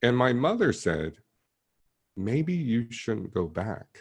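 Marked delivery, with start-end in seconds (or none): 2.2-4.0 put-on gentle, loving voice, quiet, higher. Retelling a mother's advice not to return to school: imitating mother speaking quietly, lovingly. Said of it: "she said it quietly and lovingly".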